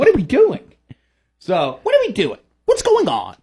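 lively, high voice with big bouncing swoops. Joking about a strange game schedule, doing a Tucker Carlson impression. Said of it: "I'm working on my Tucker".

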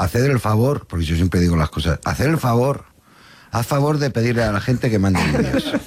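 barked, mock threatening, menacing tone.

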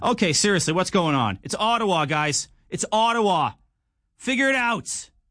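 exasperated griping. Host performing a bit for listeners, impression of a frustrated Roughrider fan. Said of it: "my impression of every Saskatchewan Roughrider fan".

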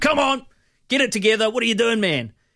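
put-on screaming. Describing a hypothetical workplace scene, imitating a manager screaming across the room. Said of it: "the manager kind of screams across the room".

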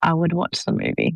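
ashamed-sounding tone. Asked whether they'd rather read the book or watch the movie: sounding ashamed. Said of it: "Why do I sound ashamed?".

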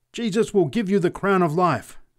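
triumphant, exultant preacher-style scream, high-pitched. A preacher answers a scornful man's jeer, screaming exultantly. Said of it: "screamed the preacher exultantly".

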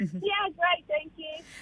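cheerful, very quiet, hushed, happy voice. A caller answers the host's greeting, sounding happy. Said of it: "You sound so happy".

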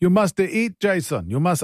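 failed put-on Greek accent. Imitating a school friend's dad who made chips, in a bad greek accent. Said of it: "that's not a Greek accent".

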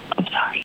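slow, soft whisper. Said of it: "Why are you whispering?".

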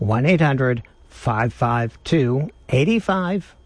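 deliberately very slow, slowed-down delivery. Radio host repeating the call-in phone number for listeners, very slow. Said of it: "I'll say it slower".

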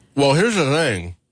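muffled speech, chewing, mouth full of food. On radio, the speaker keeps talking while eating taffy, mouth full. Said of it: "continue talking with your mouth full".

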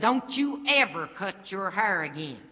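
powerful, full voice. Speaker retells what a woman said when he leaned down to her: big strong voice. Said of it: "in a big old strong voice".

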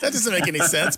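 very high, baffled, protesting tone.

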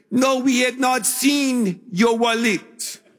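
put-on Peruvian accent. Retelling calling a restaurant about a lost wallet, the manager in a Peruvian accent. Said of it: "That's my best Peruvian accent".

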